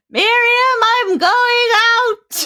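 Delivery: very high, drawn-out, called-out voice. Voicing a character who calls back as he leaves: calling back to someone. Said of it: "he calls back".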